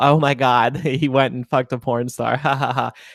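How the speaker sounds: put-on giggly schoolgirl laughter. Retelling own reaction to the news: imitating own schoolgirl giggling. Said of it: "giggling like a schoolgirl".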